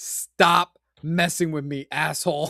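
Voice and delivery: put-on rude cat voice. Acting out what the cat would say: voicing a rude cat. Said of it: "The cat would be like".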